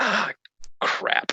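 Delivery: breathy, hushed whisper, muttered aside. A player's character, spotted from a distance, mutters before diving into a tent, whispering to oneself. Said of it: "I whisper to myself".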